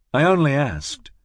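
plain

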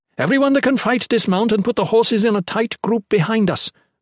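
commanding voice, pitched very high. Maywin addresses the group as something unseen races toward the hill, ordering. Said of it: "Maywin ordered".

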